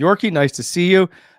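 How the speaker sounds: very loud hoarse voice. Show host greeting his co-host at the start of the show, a little raspy. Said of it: "You are a little raspy".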